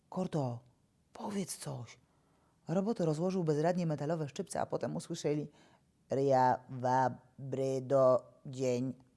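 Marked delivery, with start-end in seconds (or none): 0.1-2.0 hushed, soft half-whispered words. Kuki leans over the robot Korto and asks it to say something: half-whispered. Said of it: "Kuki pochylił się i szepnął".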